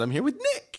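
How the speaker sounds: tiny, high, squeaky mouse voice. A co-host teases the other host's pitchy intro, mimicking a co-host's high voice. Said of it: "your voice got really high when you said".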